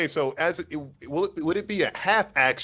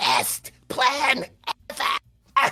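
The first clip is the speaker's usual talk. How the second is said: soft, very high-pitched slight whisper; 11 semitones higher than usual. Game narrator voices a character flying the party toward a sleeping dragon, in a slight whisper. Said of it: "you hear him slightly whisper".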